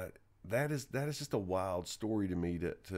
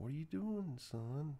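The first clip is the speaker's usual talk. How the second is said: put-on very quiet voice, higher and quieter; 7 semitones higher, 5 dB quieter than usual. Retelling mom calling to her son holding a gun: imitating mom speaking really quietly. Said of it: "really quiet".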